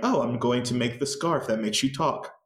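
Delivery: normal talking voice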